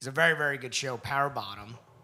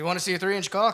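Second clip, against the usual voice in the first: put-on Irish accent, higher and louder; 6 semitones higher, 5 dB louder than usual. Joking around the house to annoy a partner: put-on irish accent. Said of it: "talking like an Irishman around the house".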